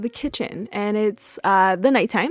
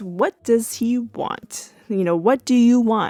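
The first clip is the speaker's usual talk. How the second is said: put-on angry, mad tone, higher; 3 semitones higher than usual. Retelling how Claire answers Cliff: imitating an angry question. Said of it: "she is mad and asks".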